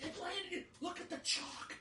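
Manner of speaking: very high, shrill screaming. Recalling a shady call at a throwing competition, the speaker retells his dad screaming. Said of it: "he's like screaming".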